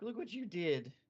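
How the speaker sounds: weepy, blubbering, sob-broken crying voice. Retelling a character's line as he starts crying: imitating crying. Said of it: "and then he starts crying".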